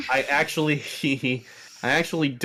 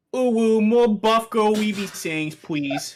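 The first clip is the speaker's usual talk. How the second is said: put-on baby talk, higher; 7 semitones higher, 3 dB louder than usual. Asking for more sayings from another player: talking like a baby. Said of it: "Why did you talk like a baby?".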